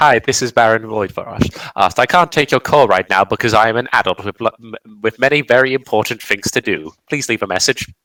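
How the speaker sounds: speech stumbling, tripping over words mid-sentence. Imagining a character's phone going to voicemail: imagined voicemail greeting of Baron Voidfrost. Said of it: "I like to imagine it just goes to voicemail".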